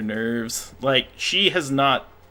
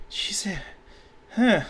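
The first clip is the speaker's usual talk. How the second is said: very high-pitched, mumbled side remark; 9 semitones higher than usual. Voicing a confused character who sees a player's character: muttering under her breath. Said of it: "she kinda says under her breath".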